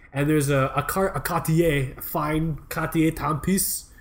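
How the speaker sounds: poor, bad fake French accent. Talking about jobs at local watch boutiques, bad French accent. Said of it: "That's not a very good accent".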